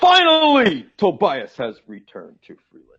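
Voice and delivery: loud put-on voice with big swinging pitch. Trying a line about the episode in the voice of The Rock. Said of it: "I'm gonna try this in the voice of the Rock".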